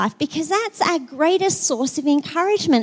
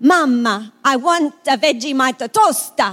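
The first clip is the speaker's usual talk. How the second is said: louder put-on Italian accent; 4 dB louder than usual. Retelling her daughter showing off her new Italian, imitating Luce's mock Italian. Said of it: "she gets the hands around and she goes".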